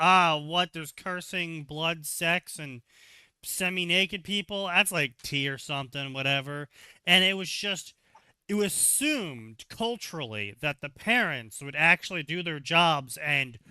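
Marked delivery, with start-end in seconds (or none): none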